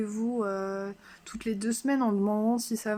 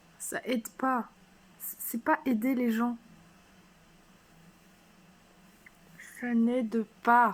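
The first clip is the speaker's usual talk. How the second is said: angry, furious voice. Complaining about being handed pills instead of help: angry. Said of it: "je suis en colère, là. Je suis vénère".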